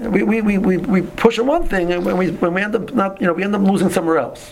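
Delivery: high, sly, tempting voice.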